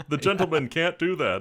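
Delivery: slow, loud auctioneer-style full radio voice. Quoting the auctioneer from the auction scene: Les Tremayne auctioneer voice. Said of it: "Great radio voice".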